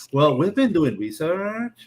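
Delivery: imitated meeting-room tone of voice. Mocking how people sound in meetings, put-on meeting tone of voice. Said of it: "taken like with this tone of voice".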